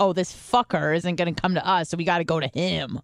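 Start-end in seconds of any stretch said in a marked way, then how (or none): none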